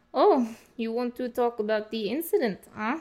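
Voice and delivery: heavy put-on Russian accent. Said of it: "What does a Russian accent have to".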